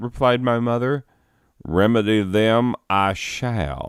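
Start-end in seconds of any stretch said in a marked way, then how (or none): 1.6-3.9 put-on heavy Southern accent, very slow thick drawl. Retelling a tall stranger's offer to help: thick southern drawl. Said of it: "said the tall stranger".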